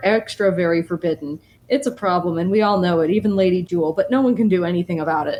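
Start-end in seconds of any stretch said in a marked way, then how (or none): none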